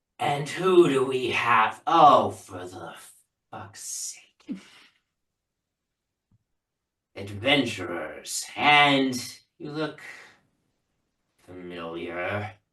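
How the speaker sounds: devil character voice. Game master voicing a supervisor devil greeting the adventurers, supervisor devil voice. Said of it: "the supervisor devil looks over at you guys and is like".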